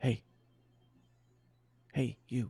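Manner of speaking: soft, gentle, quiet, hushed voice. Storyteller voicing a crew member calling to someone dozing off: quiet voice. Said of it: "a quiet voice say".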